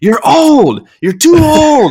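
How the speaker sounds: very loud, very slow, very high, shrill taunting scream. Retelling Edelman screaming at Tom on the sideline: imitating Edelman screaming. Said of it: "He's screaming at Tom".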